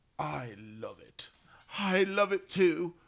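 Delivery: mock pretentious, snobbish voice. Showing how pretentious rich people talk about art: imitating pretentious art snobs.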